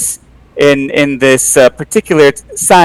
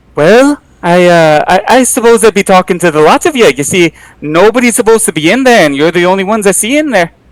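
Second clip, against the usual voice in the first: speaking in a put-on Irish accent; 4 semitones higher than usual. Retelling being stopped by an officer, voicing the officer in an Irish accent. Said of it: "Ooh, Ooh, all right, Irish".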